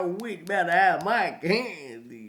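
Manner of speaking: proper, very loud, slow delivery, candy drawn out. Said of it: "it gotta be like that".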